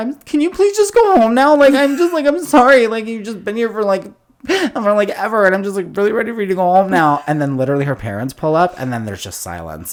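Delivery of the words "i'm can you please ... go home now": very high, loud meltdown rant. Retelling a scene from a show where a girl has a meltdown: imitating a girl's meltdown. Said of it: "a little bit of a meltdown".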